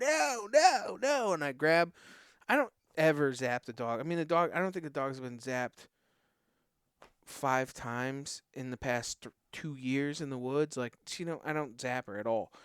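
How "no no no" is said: shrill, high, frantic, panicked screaming. Retelling a moment in the woods, re-enacting screaming at the dog. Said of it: "I'm screaming at her".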